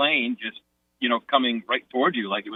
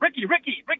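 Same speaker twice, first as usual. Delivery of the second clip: frantic, panicked, very high yell. Speaker recounts a plane landing ahead of their car, retelling yelling to their brother. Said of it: "and I'm yelling to my brother".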